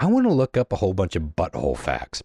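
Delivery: ordinary delivery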